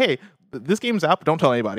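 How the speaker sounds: normal talking voice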